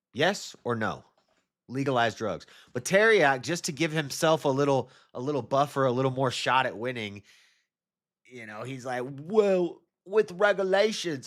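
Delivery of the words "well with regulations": high put-on British accent, well stretched out. Imitating a debater's words with a put-on British accent. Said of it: "that's British".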